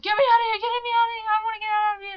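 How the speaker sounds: very high, loud, panicked screaming. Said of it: "you got the flies going".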